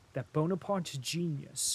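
plain reading voice

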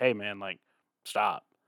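very quiet, low, calm voice. Retelling a stranger asking a prankster to stop, imitating a calm request. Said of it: "the dude's very calm in the beginning".

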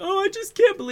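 very high-pitched fake blubbering crying. Mocking award winners who go up there crying: mock crying. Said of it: "you go up there and you're crying".

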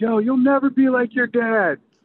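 put-on very high, shrill yell. Retelling what parents yelled at the speaker on the field, retelling parents' yelling. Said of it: "parents would be yelling at me like".

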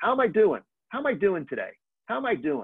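put-on New York accent. Speaker quoting the former New York mayor's saying, in Ed Koch's New York accent. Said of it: "in his great New York accent".

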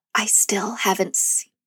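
hushed whisper. On a podcast, telling the other person, whispering. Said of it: "i'm whispering it so people don't get mad".

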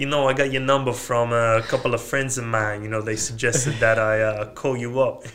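strong Brooklyn-accented voice. Prompted by others, the speaker tries a sales call in a Brooklyn accent. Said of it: "Do it in the Brooklyn accent".

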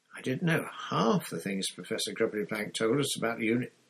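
ordinary delivery

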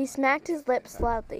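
plain

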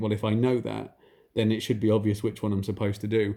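usual speaking voice

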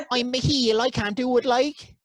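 put-on nasal voice. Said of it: "It's always nasally".

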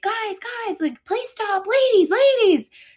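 very high, insistent, high-pitched hollering. Retelling a man on a bike yelling at her group on the street, imitating a man yelling. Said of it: "he's like yelling at us".

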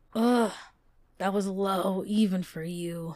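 groaned, groaning. Reading a story aloud, a man pinned under a woman's dagger speaks, groaning. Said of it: "he groaned".

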